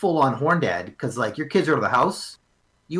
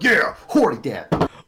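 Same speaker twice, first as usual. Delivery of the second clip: pushy, aggressive, emphatic, forceful delivery. Acting out a guy sitting at his computer: imitating an aggressive guy. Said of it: "sitting at his computer aggressively".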